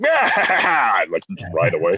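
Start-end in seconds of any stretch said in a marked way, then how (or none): 0.0-0.9 pirate voice yelling scream, pitched higher. Retelling riding away on a bumper boat: imitating screaming like a pirate. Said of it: "I started screaming like a pirate".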